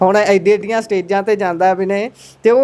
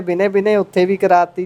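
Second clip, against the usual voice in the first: usual speaking voice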